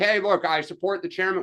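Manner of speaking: normal talking voice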